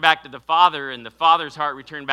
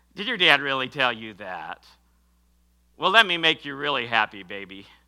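mocking smart-aleck wise-guy young punk voice; 2 semitones lower than usual. Imagining a young punk mocking a father's warning, smart aleck young punk voice. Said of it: "the smart aleck voice of some young punk".

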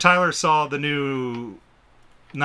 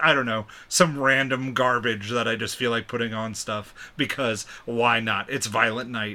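ordinary talk, nothing marked

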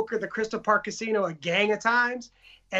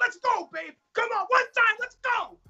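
shrill, loud, very high, pumped-up triumphant scream; 13 semitones higher than usual. Telling how a lady interrupted his winning game, retelling his own screaming. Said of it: "while I'm fucking screaming like".

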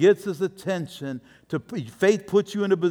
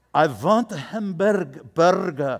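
put-on Spanish accent, very slow. Mocking travelers who try the accent on locals, put-on spanish accent. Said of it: "maybe I'll use the accent".

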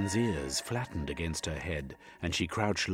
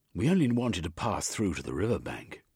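ordinary delivery

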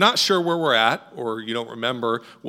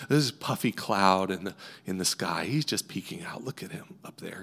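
quiet, soft-spoken, hushed painter's voice; 5 semitones lower, 7 dB quieter than usual. Retelling what a TV painter said while painting: imitating Bob Ross's soft-spoken voice. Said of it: "He had this sort of soft-spoken voice".

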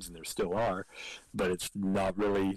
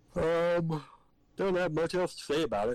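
words caught mid-yawn, pitched up; 8 semitones higher than usual. Finishing a thought about a movie, yawning while talking. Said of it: "Sorry, I'm yawning".

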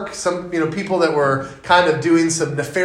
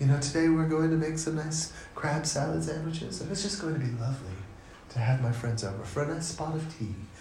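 very quiet, soft, hushed voice; 13 dB quieter than usual. Imitating how she talks while making food for friends, in a hushed NPR voice. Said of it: "she talks in a really hushed tone, like the NPR voice".

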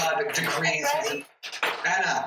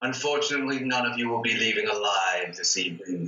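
very low, deep, dark character voice; 7 semitones lower than usual. Voicing Strahd as he speaks to the party, sword in hand: Strahd voice. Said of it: "and he says".

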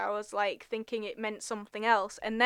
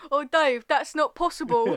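put-on Cockney accent, louder; 5 semitones higher, 6 dB louder than usual. Recalling a dub where a cockney spoke the lines, cockney accent. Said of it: "some Cockney going".

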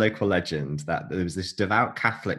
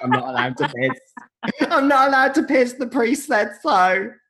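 very high, loud, bad French accent; 5 dB louder than usual. Retelling a husband's admonishment to his wife, in a French accent. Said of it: "That's my French accent".

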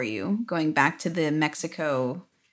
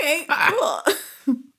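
high, slow, deadpan, unbothered dad voice. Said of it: "And he's like".

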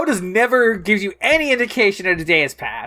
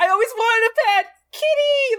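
high-pitched put-on excited squeal. Retelling how Amy Jo Johnson reacts to getting the cat: imitating an excited Amy Jo Johnson. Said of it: "She is so fucking pumped for this cat".

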